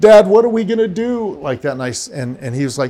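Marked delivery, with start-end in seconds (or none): 0.0-1.4 very high, loud, tearful wailing crying scream. Father retells his son crying out to him, imitating a crying scream. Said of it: "in a crying scream".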